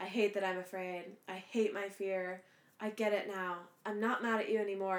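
monotone line reading. Mocking an actress's lines from a scene, repeat them in a flat monotone. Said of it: "so monotone".

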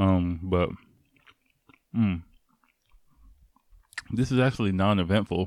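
talking with mouth full. Tasting an ice cream bar, speaker talks with mouth full. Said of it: "I'm talking with my mouthful".

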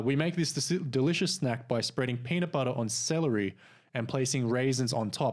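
usual speaking voice

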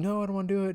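mock child yelling, high-pitched. Retelling a grumpy child's refusal to nap: imitating a child yelling. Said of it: "he's yelling".

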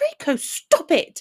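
sharp, high, offended snapped bark. Reading a scene where Hermione answers Draco: Hermione barking. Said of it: "she barked".

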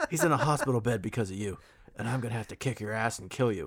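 fast, rattled-off, botched British accent. Resuming the bit after a listener's comment: Jason Statham impression.

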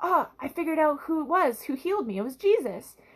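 acted, all-excited delivery. Retelling a Bible story, the healed man realizes who healed him, acting out an excited man. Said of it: "he's all excited".

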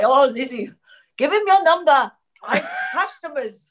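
imitated laughing while talking. Retelling what the laughing counter guy said to the speaker, imitating someone laughing. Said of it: "was really laughing".

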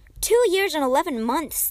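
defensive, on-guard tone. Challenged by a doubting question, a girl answers, defensive. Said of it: "the girl said defensively".

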